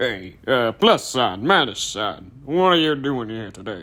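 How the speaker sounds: put-on, deep-voiced Western voice. Showing how the character Iceberg sounded: imitating Iceberg's deep-voiced Western voice. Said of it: "a friggin' deep-voiced Western".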